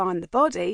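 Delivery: plain reading voice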